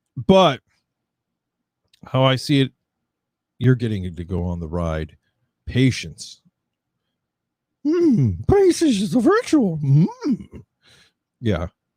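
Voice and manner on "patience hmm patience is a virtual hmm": clumsy put-on voice, very high, swooping all over. Commenting on a ride's queue times, in my worst Yoda voice. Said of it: "My worst Yoda voice".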